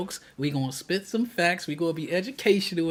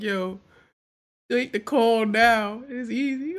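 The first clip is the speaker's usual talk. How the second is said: put-on deeply disappointed tone, slow, slightly high; 5 semitones higher than usual. Imitating a man in a video who sounds disappointed in them: imitating a disappointed voice. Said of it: "that boy sounds so disappointed in us".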